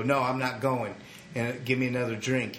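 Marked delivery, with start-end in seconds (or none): none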